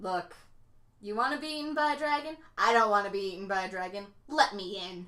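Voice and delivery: matter-of-fact, bone-dry, utterly unbothered, no fuss. Playing Wick, the speaker looks at him before speaking: Wick, deadpan. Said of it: "kind of deadpan look at him and be like".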